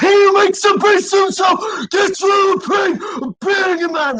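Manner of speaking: very high, shrill screamed cries. Retelling a bit about being in the supermarket: imitating screaming.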